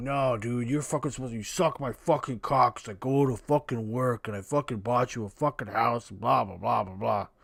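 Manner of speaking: aggrieved man's coarse, crude ranting. Reacting to a video, imitating the man in it: imitating the man in the video. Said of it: "now he's like".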